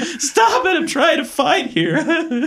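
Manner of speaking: giggling, very high and very slow laughing. Retelling a fight scene where Michelangelo cannot stop laughing: imitating Michelangelo laughing. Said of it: "He's laughing so hard. He's like".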